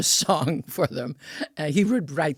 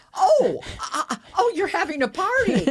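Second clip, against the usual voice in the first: acted, pretend surprise, higher pitch; 3 dB louder than usual. Retelling arriving at a party by pretended chance: feigned surprise. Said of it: "I'd pretend like I was across the street and say".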